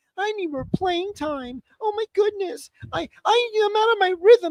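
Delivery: very high, whiny crybaby voice. Mocking a baseball player's complaints about playing time: imitating a whiny crybaby. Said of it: "there is no bigger crybaby than".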